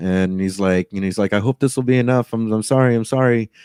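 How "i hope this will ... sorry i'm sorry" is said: humble, really apologetic tone. Retelling a passenger handing over a hundred dollar bill: imitating an apologetic passenger. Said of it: "just really apologetic".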